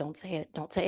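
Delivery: soft, hushed half-whisper under the breath. Retelling how a team leader at the next desk stopped a comment: imitating someone half-whispering. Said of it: "And he's whispering it".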